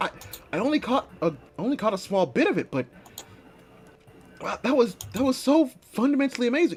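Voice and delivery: high, choked-up, crying, tearful gushing voice. Voicing a princess crying after watching a dance: tearful in-character voice. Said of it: "rolling down her eyes".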